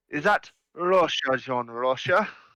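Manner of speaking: slow, drawn-out Welsh accent. Showing a usual Welsh accent: Uncle Bryn Welsh accent. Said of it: "My Welsh is usually Gavin and Stacey, Uncle Bryn".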